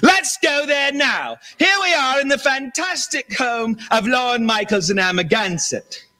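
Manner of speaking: shrill, high screaming celebrity host voice. Mocking a screaming TV host from Lifestyles of the Rich and Famous: Robin Leach impression. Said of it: "Robin Leach".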